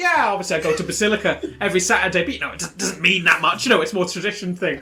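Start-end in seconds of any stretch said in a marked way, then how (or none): 0.0-2.2 offhand, casual, lukewarm, noncommittal tone. Mocking how ordinary believers would talk: imitating a casual space Anglican. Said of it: "Everyone else is like a space Anglican".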